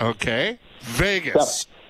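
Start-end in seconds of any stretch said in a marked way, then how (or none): 0.8-1.7 Vegas stressed with a firm falling pitch. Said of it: "Emphasis on the word Vegas".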